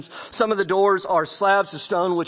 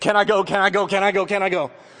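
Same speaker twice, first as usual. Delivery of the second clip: put-on child voice, nagging and begging over and over. Acting out kids begging to go along: imitating a begging kid. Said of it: "Kind of like your kids".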